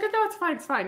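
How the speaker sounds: put-on Scottish accent, charming. Telling how he just comes in and says these things, imitating a charming Scottish accent. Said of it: "almost charming too with his Scottish accent".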